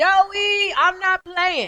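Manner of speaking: stern, loud, high scream, first word drawn out. Retelling his wife's words in an argument: imitating someone screaming. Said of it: "she just screamed at me".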